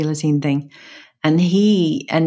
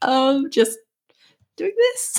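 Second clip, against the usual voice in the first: slow, mock terrified, cowering delivery; 10 semitones higher than usual. Retelling answering a man who stormed back into the room, retelling a terrified reply. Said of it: "just cowering here, terrified".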